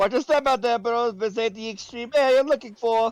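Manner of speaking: fake Jamaican accent. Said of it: "now you're doing the Jamaican accent".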